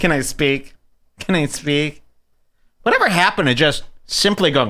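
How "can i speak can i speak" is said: snide, mocking, sarcastic tone. Mocking sarcastic people online: mocking sarcastic internet voice. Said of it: "Catching people".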